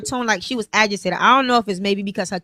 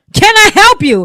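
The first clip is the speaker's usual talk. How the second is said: mock hostile tone, higher and louder; 9 semitones higher, 11 dB louder than usual. Retelling her reply after turning around: imitating her own hostile reply.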